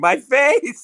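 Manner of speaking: put-on panicked scream. Playing a character who suddenly screams at whoever is there: screaming in character. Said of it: "start screaming".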